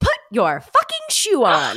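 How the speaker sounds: very loud, high, swooping sing-song silly voice. Retelling what she said when interrupting during a shoe struggle: funny voice. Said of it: "in like a funny voice".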